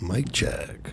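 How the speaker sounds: creepy late-night voice. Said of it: "so creepy".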